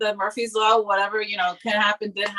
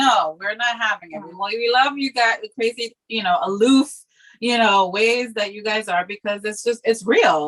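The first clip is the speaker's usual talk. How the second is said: ordinary talk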